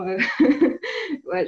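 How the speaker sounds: high, loud laughing aside, amused.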